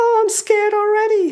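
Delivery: tiny, frightened, very high voice. A storyteller warns children of the wicked world; one answers in a small scared voice. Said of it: "says a small voice".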